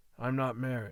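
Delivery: ordinary delivery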